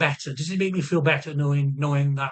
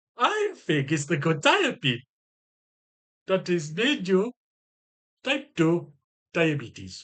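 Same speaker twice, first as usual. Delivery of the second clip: put-on very slow, drawn-out, swooping Jamaican accent; 3 semitones higher than usual. Retelling what he said at the appointment, in a jamaican accent. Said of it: "I don't know why I sound fucking Jamaican".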